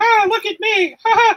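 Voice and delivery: very high, swooping cartoon voice. Complaining about mismatched dubbing, mimicking a tough guy's dubbed line: Mickey Mouse voice. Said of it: "I'm Mickey Mouse voice".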